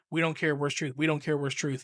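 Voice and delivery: plain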